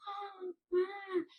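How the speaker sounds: high, soft, mocking witch wail. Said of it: "she's mocking me".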